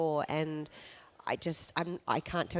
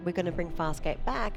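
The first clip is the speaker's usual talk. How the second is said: ordinary talk, nothing marked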